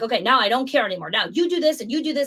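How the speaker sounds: put-on drill-sergeant voice. Retelling how a leader finally broke with a struggling center: imitating a drill sergeant. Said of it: "And now she's drill sergeant".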